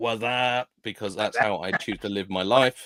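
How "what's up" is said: parody "what's up" in spoof-movie style. Reading out a viewer's greeting, Scary Movie style "What's up". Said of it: "I'm gonna read that as Scary Movie style".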